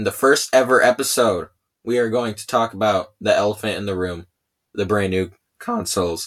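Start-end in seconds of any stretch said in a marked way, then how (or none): 4.7-6.3 voice cracking, breaking in pitch. Introducing the topic of the first episode, voice cracking. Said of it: "voice crack".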